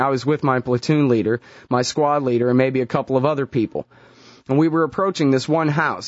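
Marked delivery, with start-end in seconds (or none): none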